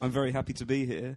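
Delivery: ordinary talk, nothing marked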